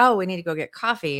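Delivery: ordinary talk, nothing marked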